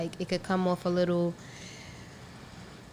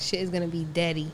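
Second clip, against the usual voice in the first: ordinary talk, nothing marked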